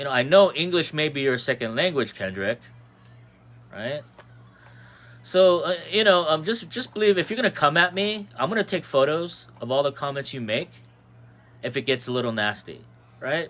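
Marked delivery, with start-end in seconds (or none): none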